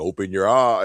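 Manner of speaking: ordinary delivery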